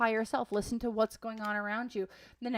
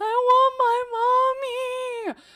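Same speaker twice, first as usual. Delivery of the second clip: put-on very high, loud, drawn-out toddler wail, mommy stretched; 13 semitones higher, 10 dB louder than usual. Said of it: "toddler tantrum meltdowns".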